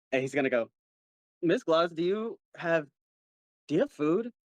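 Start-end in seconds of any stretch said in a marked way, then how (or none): 1.4-4.3 put-on fully slurred drunken speech, pitched up. Voicing a drunk character calling out for food: drunk slurring. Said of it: "fully slurring".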